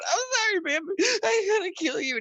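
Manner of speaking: put-on very high-pitched sobbing, tearful crying voice. Retelling what he said while on the phone with 911, imitating his past self crying. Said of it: "And I'm in near tears, just crying".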